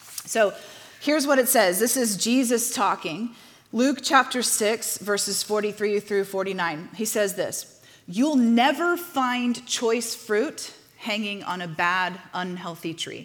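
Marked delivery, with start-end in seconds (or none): 8.1-13.3 very slow, measured, deliberate word-by-word reading. Reading a bible verse to the group, the speaker reads very slowly. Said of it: "I'm going to read this really slowly".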